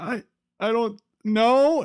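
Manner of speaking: mock kid near tears, very high, very slow. Retelling how a confused kid answered at an autograph signing: imitating a kid about to cry. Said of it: "looks back at his mom like he's about to cry".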